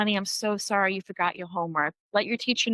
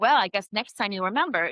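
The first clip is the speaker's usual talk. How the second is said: put-on sarcastic voice. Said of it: "I can hear a parent saying that so sarcastically".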